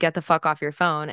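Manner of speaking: mock irritated, fed-up, curt, blunt delivery. Retelling what a friend said to a girl on her phone: imitating someone saying it loudly. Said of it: "did not whisper, very loud".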